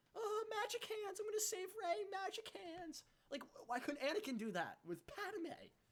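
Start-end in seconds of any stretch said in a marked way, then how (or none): 0.2-3.1 mock whiny voice. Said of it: "Kylo is a whiny bitch".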